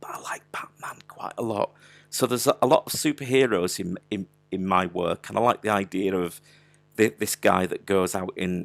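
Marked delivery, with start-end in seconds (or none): 0.0-1.7 hushed, breathy, secretive whispered aside. Admitting something to an internet audience while whispering. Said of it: "I don't know why I'm whispering this".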